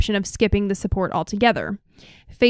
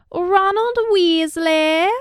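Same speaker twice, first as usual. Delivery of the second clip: very high, luxurious, put-on British accent; 9 semitones higher, 3 dB louder than usual. Asked for another Harry Potter name, said in a British accent. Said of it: "Your British accent".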